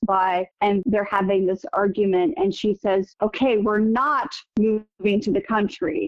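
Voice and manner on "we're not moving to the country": hard, heavy stress on 'not'. Saying a woman's line the way he heard it in his head, stress on not. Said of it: "I really wanted emphasis on the word not".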